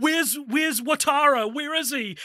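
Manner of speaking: mock on the brink of tears, high, drawn-out. Mocking an overly emotional portrayal of Al, the speaker does a mock-tearful Al impression. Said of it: "Like he's on the brink of tears".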